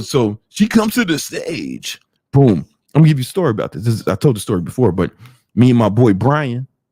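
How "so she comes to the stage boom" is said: swooping, drawn-out strip club DJ hype voice. Speaker showing how the strip club DJ sounds, in a strip club DJ voice. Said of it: "the D J sounds like this".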